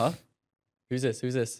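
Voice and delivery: put-on, baffled, confused voice with puzzled huh. Retelling a phone call to a guest who answered: imitating a confused caller. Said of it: "he was just basically confused".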